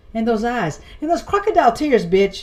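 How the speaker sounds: ordinary delivery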